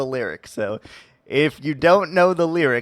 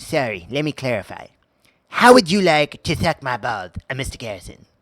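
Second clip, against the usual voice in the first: put-on cartoon kid voice. Performing a cartoon bit for listeners, Cartman voice. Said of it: "It is Cartman's voice".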